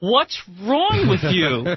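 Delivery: slow, drawn-out Jersey accent.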